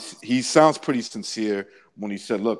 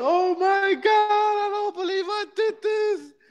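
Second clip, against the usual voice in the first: mock crying, very high, sobbing and tearful. Retelling a wife reacting on the phone: imitating a woman crying. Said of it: "and she starts crying".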